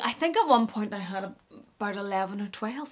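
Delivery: soft, hushed half-whisper under the breath. Confessing something to the audience, half-whispering. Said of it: "I'm whispering because".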